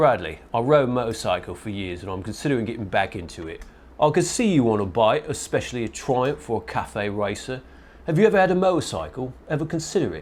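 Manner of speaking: put-on British accent. Host reading a supporter's Patreon question aloud, British accent. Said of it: "British accent, please".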